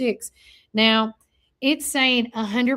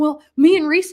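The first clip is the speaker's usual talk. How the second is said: put-on loud, high-pitched voice sounding like a little kid; 5 semitones higher, 7 dB louder than usual. Retelling her husband's reply when he called her, imitating a childlike voice. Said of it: "and he sounded like a child".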